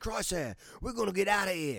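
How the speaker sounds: very high-pitched put-on Australian accent. Retelling a Star Wars scene, voicing her line to Crosshair in an Australian accent. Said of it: "That's my British, or my Australian accent".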